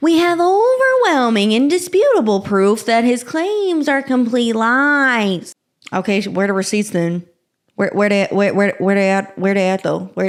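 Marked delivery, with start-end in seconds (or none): 0.0-5.5 slow, drawn-out little weaselly voice. Speaker quotes a celebrity's lawyer's statement in a little weasel voice. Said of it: "I have to use a little Weasley voice because they're weasels".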